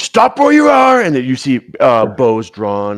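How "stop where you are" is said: very high, loud, shouted yell. Voicing a bandit who jumps out of the forest: bandit yelling. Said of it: "the one yells".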